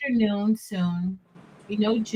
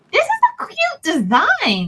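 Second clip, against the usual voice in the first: surprised tone, higher and louder; 8 semitones higher, 6 dB louder than usual. Complimenting another speaker's rhinestone design, sounding shocked. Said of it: "Why do you sound shocked?".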